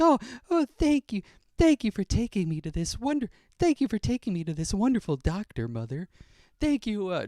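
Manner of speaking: put-on very high, swooping, sing-song babyish voice. Imitating the voice a parent does for a baby, put-on sweet baby voice. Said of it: "Laura's voice for Jack is more like".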